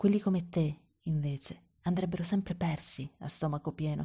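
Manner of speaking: ordinary delivery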